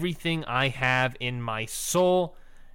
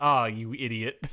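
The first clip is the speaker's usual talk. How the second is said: mock exasperated, annoyed tone, lower pitch; 3 semitones lower than usual. Retelling how the wrestlers react to the spill: imitating an annoyed scolding. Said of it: "Not in a sexy slow motion way, but in a".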